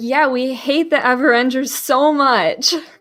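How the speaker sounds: very loud, drawn-out delivery. Player character answering a stranger who offers help, very loud. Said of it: "I'm gonna be like very loudly be like".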